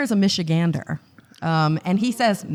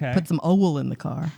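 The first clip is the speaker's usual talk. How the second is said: put-on Deep South Texan accent, oil said as owl; 3 semitones lower than usual. You show how your mom pronounces a word, in a put-on Deep South Texas accent. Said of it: "That's like a Texas, like a deep south thing".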